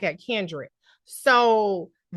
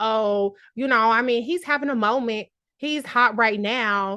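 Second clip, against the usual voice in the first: play-acted sarcastic, dismissive, patronizing, condescending delivery. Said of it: "just sarcastic and really condescending".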